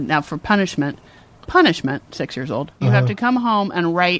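ordinary delivery

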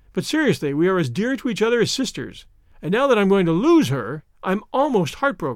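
plain

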